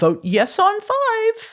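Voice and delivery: stretched out, pitched way up high. Retelling a commercial where the mule speaks: Missouri Mule voice. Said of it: "in his best mule voice".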